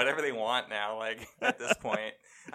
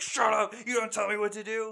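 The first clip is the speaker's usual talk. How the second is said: put-on angry yell, much higher; 10 semitones higher than usual. Describing a game character who yells at everyone in cutscenes, mock-angry yelling. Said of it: "he's so mad at this".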